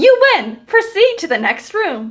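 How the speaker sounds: very high, bright, upbeat, peppy chirp. Narrating the game, the storyteller voices what the players hear in a peppy, cheery voice. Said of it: "you hear a peppy, cheery voice go".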